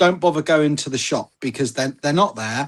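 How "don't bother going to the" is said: usual speaking voice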